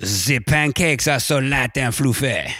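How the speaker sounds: slow French accent. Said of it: "just do a French accent".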